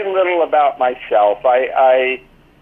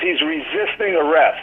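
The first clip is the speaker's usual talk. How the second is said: mild yell, called out loudly; 2 semitones higher, 3 dB quieter than usual. Retelling how the man yelled after being bitten: imitating someone yelling at top of lungs. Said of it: "yells at the top of his lungs".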